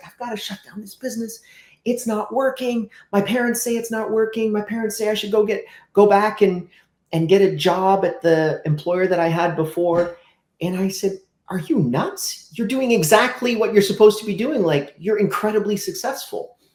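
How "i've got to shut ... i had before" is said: put-on distraught, tearful, close to crying. Retelling what a woman in tears told them, imitating someone in tears. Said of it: "she's in tears and she's like".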